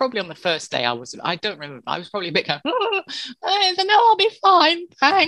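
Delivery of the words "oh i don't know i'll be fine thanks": very high, nervous, high-pitched register. Retelling own first day on air: imitating own nervous higher voice. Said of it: "slightly higher register".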